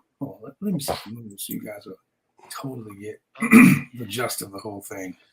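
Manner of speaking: put-on very low, sexy, seductive sultry voice. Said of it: "in her sexiest voice".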